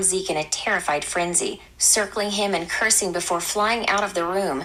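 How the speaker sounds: plain reading voice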